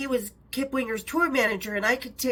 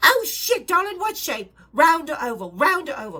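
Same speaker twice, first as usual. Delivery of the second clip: put-on tiny little voice with English accent; 4 semitones higher, 4 dB louder than usual. Retelling a phone call from Sharon Osbourne: imitating Sharon Osbourne's English voice. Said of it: "a tiny little English voice".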